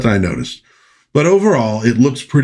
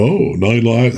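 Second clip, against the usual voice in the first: put-on snooty cat voice, slower. Describing old cat food commercials, doing a snooty Morris the Cat voice. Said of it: "Morris the cat sort of talked like this".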